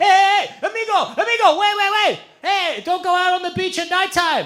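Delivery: frantic high yelling. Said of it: "Eduardo being like".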